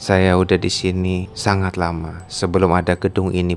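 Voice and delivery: ordinary talk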